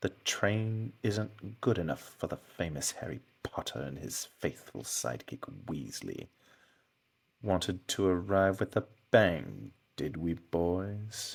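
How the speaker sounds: low, long drawl with drawn-out words. Taking a turn after being told to try it: long drawl Snape voice. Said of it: "gotta get that long drawl out".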